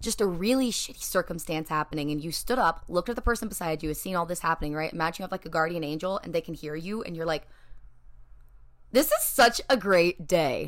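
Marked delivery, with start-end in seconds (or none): 8.9-10.7 bright, cheery smiling voice, very slow and swooping. Acting out someone living delusionally, speak in a smiling cheerful voice. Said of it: "You hear the smile in my voice?".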